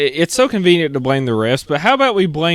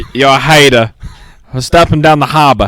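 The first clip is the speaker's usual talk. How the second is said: terrible, clumsy put-on Boston accent; 6 dB louder than usual. Answering being called a hater, in a bad Boston accent. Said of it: "that was my best Boston accent".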